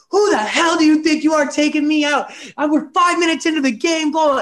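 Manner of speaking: shrill, very high screaming outburst. Retelling confronting the coach who took him out: imitating himself screaming. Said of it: "screaming at him".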